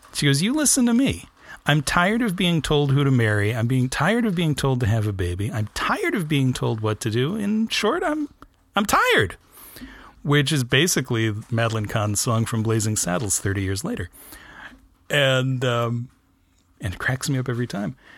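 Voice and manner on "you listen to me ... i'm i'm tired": usual speaking voice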